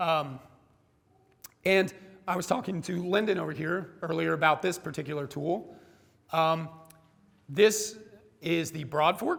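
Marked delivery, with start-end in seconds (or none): 7.5-9.4 voice breaking and cracking mid-phrase. Introducing a tool to listeners; voice cracking. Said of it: "I like how my voice cracks there".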